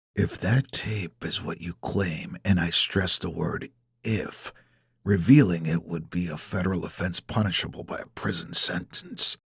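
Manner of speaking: speaking with clenched teeth. Reading a man's reply in a story, through gritted teeth. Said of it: "He speaks through gritted teeth".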